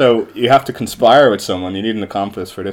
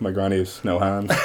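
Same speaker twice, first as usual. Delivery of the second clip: acted straight-faced delivery, softer; 2 semitones lower, 7 dB quieter than usual. Retelling a prank where the accomplice answers with a straight face: imitating Martin's deadpan reply. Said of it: "straight face".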